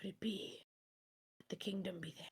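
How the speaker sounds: whispered mutter to self, under the breath. Game master voicing Ficus as the party goes deeper inland, Ficus muttering to himself. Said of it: "hear Ficus muttering to himself like".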